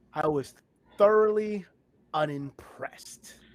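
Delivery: loud, slow, emphatic, sincere-sounding. Repeating a line after being asked to say it like he means it. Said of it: "Say it like you mean it".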